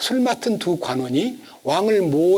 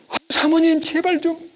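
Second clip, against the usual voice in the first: put-on shocked, startled begging, very high pitch; 10 semitones higher than usual. Retelling how Joseph fled the master's wife, imitating a startled plea. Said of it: "요셉이 너무 놀래가지고".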